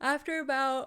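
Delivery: talking through a yawn. Narrating a story to listeners, yawning mid-sentence. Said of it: "sorry, I'll keep yawning".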